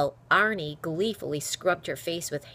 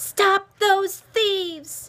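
very high, loud, strong, shrill shout; 8 dB louder than usual. She shouts after two laughing boys she calls thieves, loud, strong shout. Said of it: "she could hear herself shouting".

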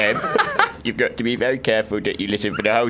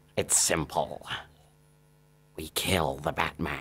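very low supervillain voice, villain-style; 7 semitones lower, 11 dB quieter than usual. Doing a best impression when asked: Joker impression. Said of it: "the Joker from Batman, I can do".

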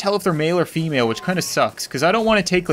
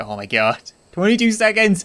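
panicked, frantic, higher; 3 semitones higher than usual. Gamer watching a 22-second countdown run down, panicking. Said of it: "I'm panicking".

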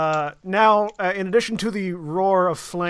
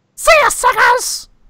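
very high, shrill, loud yelled goblin voice; 10 dB louder than usual. Game master voicing a fleeing goblin yelling to the other goblins; goblin yell. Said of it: "in Goblin, Flint hears".

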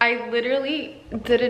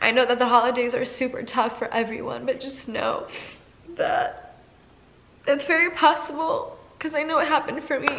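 tearful voice while speaking. Encouraging others who find the holidays tough, crying while speaking. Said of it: "I wasn't planning on crying".

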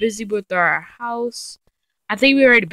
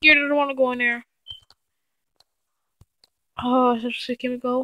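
scared, frightened, pitched-up voice; 5 semitones higher, 3 dB quieter than usual. Exploring a dark place in a game, not wanting to go in: scared. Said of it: "I'm scared".

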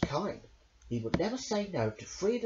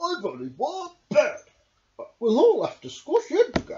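very high, shrill, loud animal voice with swinging pitch; 10 semitones higher, 10 dB louder than usual. Reading a story aloud, voicing Badger's line in Badger's voice. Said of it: "being Read by Me by only using the Badger's Voices".

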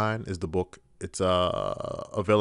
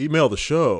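raised, high on-air radio announcer voice; 5 semitones higher, 5 dB louder than usual. Show host giving listeners the email address: radio voice. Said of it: "I'm working on my radio voice".

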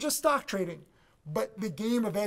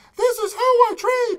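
very high, very loud, slow squeaky choirboy voice; 10 dB louder than usual. Describing how he talks on his trading DVD, in a high-pitched voice. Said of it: "I talk in a high-pitched voice".

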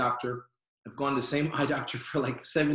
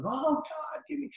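put-on loud cry, pitched higher; 13 semitones higher, 3 dB quieter than usual. Retelling praying at camp meeting with hands up: retelling his own loud cry. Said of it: "Raise your voice and say".

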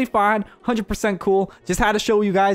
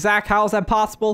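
ordinary delivery

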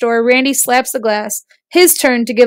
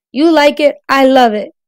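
ordinary delivery, nothing marked

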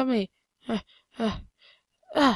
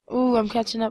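normal talking voice

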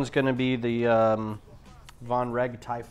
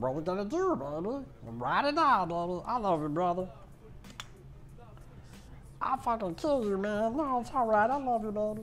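high-pitched cartoon voice with swooping pitch; 9 semitones higher, 5 dB quieter than usual. The speaker does an impression of Rick from Big Mouth. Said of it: "That was an impression of Rick from Big Mouth".

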